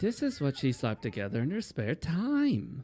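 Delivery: mimicked rising inflection, pitch going up at the end. Repeating his line to complain about it: imitating a rising inflection. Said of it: "Why does he go up with that inflection like that?".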